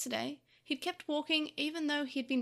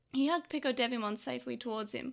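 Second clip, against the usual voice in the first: plain reading voice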